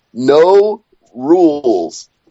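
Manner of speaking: slow, drawn-out, all-caps emphatic delivery like a headline. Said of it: "In all caps".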